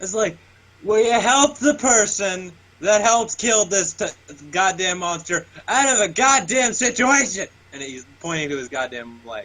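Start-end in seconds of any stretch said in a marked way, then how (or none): 0.8-7.5 high, yelled pleading voice. Calling Hephaestus over across a destroyed city: yelling in character. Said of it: "I'm just yelling at him".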